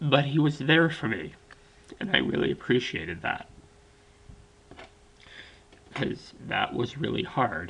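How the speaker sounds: crying, choked-up, tearful voice. Speaker remembers a best friend who was there for them, crying, choked up. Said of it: "I'm sorry, I really am crying".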